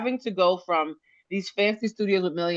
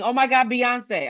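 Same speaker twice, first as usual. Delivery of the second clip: high, light, shocked squeal; 5 semitones higher than usual. Retelling how a friend reacted to news: imitating a friend screaming. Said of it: "one of them started screaming".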